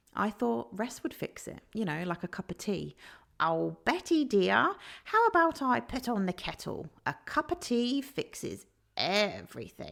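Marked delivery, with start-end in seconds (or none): 3.4-9.9 playful, high, sing-song put-on voice. Talking about burnout, doing a little impersonation of someone offering Betty tea. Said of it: "I just had to laugh at my little impersonation there".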